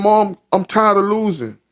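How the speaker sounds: mock crying, slow sobbing, barely getting words out. Retelling a little brother's night call to mom: imitating someone crying. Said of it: "he just crying uncontrollably".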